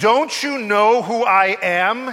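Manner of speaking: slow, loud, drawn-out wolfish snarl. Narrator reading the wolf speaking to a calm sheep, snarling. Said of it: "he snarled".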